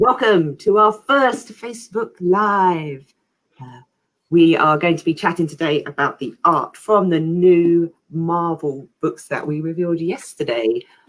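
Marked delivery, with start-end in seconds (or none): 0.0-3.1 slow, mystical moderator voice. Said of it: "speak in the mystical voice of the moderator".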